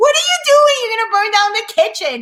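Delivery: shrill, very high, swooping yell. Retelling a kitchen flambé fire, imitating a husband yelling. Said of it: "my husband starts yelling at me".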